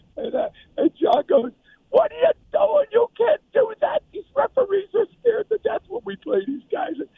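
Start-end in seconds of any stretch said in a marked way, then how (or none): 1.9-7.0 very high-pitched screaming rant. Retelling what John said after the flags came in: imitating John screaming. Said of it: "he starts screaming at me".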